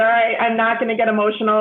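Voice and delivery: ordinary talk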